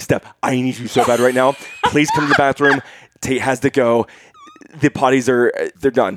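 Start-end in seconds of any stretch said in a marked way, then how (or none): none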